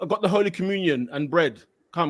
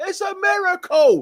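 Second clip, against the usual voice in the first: put-on, very high-pitched yell of a shouting fan; 13 semitones higher, 4 dB louder than usual. Recounting the fans' reaction at a match, the speaker is imitating fans shouting. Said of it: "fans were shouting".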